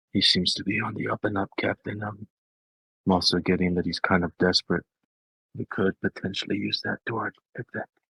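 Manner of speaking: soft, hushed, quiet half-whisper. A character half-whispers into Renwick's ear, calling him Captain: half-whispering. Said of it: "And I'm whispering".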